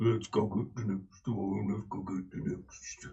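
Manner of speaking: deep, low, hushed, very quiet murmur. Describing a scene as a door screeches open, then speaking in a low voice. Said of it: "and a low voice".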